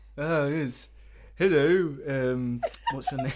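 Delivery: very slow, dim, gormless Cockney delivery. Voicing a character named Joe in a game scene: gormless Cockney voice. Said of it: "your voices are killing me today".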